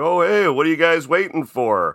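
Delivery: cheery calling out. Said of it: "and says something like".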